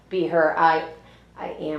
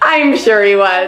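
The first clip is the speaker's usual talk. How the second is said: loud, slow line said through a laugh; 3 semitones higher, 8 dB louder than usual. Showing how to deliver the line: laughing while speaking. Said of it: "Now laugh".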